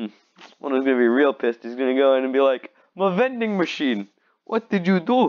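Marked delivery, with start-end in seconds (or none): 2.9-5.3 put-on high, irate Russian accent. Speaker imagines an angry vending machine owner finding the damage, in a Russian accent. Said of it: "I'm thinking the guy's Russian".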